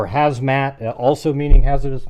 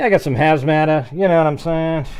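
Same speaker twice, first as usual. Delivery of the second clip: loose, lightly done, put-on Boston accent; 2 semitones higher than usual. Imitating how a man would say a word, in a sort-of boston accent. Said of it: "like a Boston accent, kind of".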